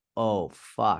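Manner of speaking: put-on hard, thick Boston accent. Quoting his reply when asked about his coffee calories, in a hard boston accent. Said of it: "He has a hard Boston accent".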